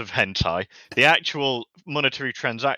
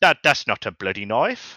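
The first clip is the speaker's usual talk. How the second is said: bad put-on Australian accent. After admitting he can't do Aussie, the speaker quotes a knife line anyway. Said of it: "I can't do Aussie".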